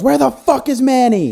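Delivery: very high-pitched, shrill, demanding yell. Retelling a movie scene of kicking down a door: imitating someone yelling. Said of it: "he yells".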